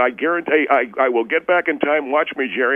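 ordinary delivery

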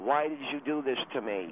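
ordinary delivery

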